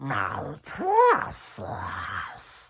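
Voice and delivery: whispered, low-placed, hushed creature voice. Speaker demonstrating how changing placement changes a voice, low-placed character voice. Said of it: "change the pitch and tone of this placement".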